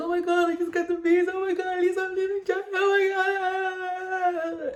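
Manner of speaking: put-on blubbering ugly cry, very high and slow. Retelling her reaction in front of her sister, imitating her own ugly crying. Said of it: "I've got like the ugliest cry".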